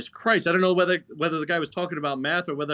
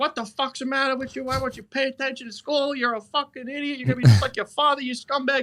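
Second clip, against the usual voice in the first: put-on furious, very high-pitched Italian-accented woman voice; 10 semitones higher than usual. Retelling his mother's reaction to his failed math class, impersonating an angry Italian mother. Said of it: "impersonation of Italian mother".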